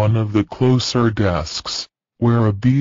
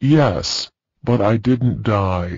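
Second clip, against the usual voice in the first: ordinary delivery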